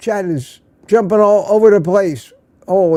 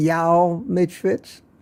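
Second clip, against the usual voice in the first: put-on slow, drawn-out Southern accent. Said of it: "Put on my best Southern accent for you".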